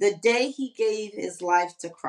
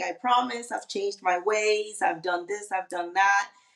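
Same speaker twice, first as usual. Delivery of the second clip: mock begging, pleading tone. Retelling how a partner came back after a breakup: imitating someone begging.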